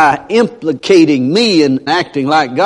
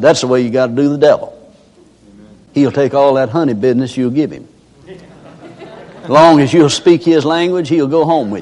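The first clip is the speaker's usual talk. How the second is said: usual speaking voice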